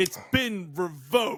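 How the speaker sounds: slow, drawn-out, cheesy action-hero delivery.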